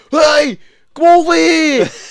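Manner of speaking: imitated Australian accent. Retelling a film fighter's challenge, imitating an australian accent. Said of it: "the guy's Australian".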